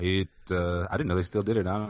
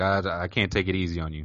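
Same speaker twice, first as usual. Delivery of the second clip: usual speaking voice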